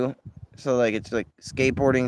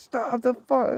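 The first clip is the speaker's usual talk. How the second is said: very high, shrill scream; 13 semitones higher than usual. Recounting chasing a rolling vehicle and yelling at its driver: retelling a scream. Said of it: "screaming like".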